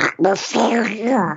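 high cartoon duck character voice. Demonstrating one of many methods out loud, in Donald Duck voice. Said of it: "say it in Donald Duck's voice".

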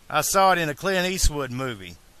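ordinary talk

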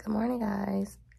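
scratchy, raspy, hoarse voice. Greeting everyone on Valentine's Day just after waking up, raspy voice. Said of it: "my voice sound so raspy right now".

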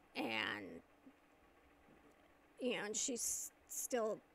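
ordinary talk

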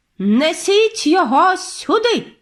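witch voice, high and barked. The chief witch orders the captured narrator brought to her: barking an order. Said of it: "гаркнула верховна відьма".

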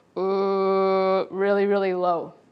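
deep bear-like voice. Explaining pitch and register, demonstrating a very low bear voice. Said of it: "Low pitch the way a bear might talk".

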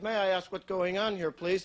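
plain

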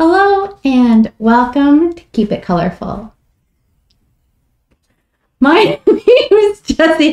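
high voice, talking through the giggles. Opening the show Keep It Colorful, the host keeps breaking up: giggling while talking. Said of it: "I've got the giggle".

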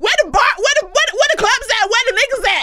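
high, loud excited outburst.

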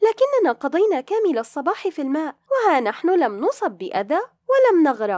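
astonished tone. Shiraz answers her brother's warning about drowning: surprised tone. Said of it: "ردت شيراز بلهجة متعجبة".

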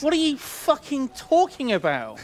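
shrill, very high, swooping, loud exasperated yell. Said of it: "Don't shout at them".

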